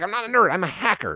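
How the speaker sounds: high, mocking nerdy-girl voice.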